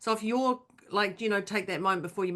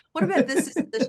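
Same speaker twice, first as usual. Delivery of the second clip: prim, posh upper-class tone, raised and pitched up; 7 semitones higher, 5 dB louder than usual. Describing reaching out to Moira when spiraling, doing a posh Moira impression. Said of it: "She says in a posh tone".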